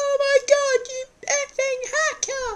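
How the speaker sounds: put-on shrill, very high, squeaky little-kid screech. Complaining about young players on game headsets, imitating a squeaky screaming kid. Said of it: "5-year-olds with squeaky voices, screaming down the headsets".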